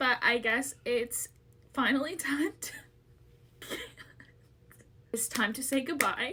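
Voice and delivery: tearful, weeping, crying through the words. Saying goodbye to her audience while pregnant, the speaker talks while crying. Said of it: "I cannot stop crying".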